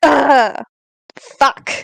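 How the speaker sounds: grunting, pained groan. Playing a wounded character whose hand hurts: grunting in pain. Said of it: "grunt in pain".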